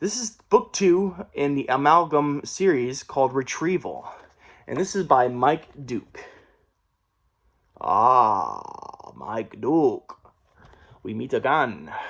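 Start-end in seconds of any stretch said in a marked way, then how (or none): 7.8-11.9 very slow, low, swooping put-on villain accent. Introducing a new book, the speaker greets its author in a put-on accent. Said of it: "I don't know why I did that accent".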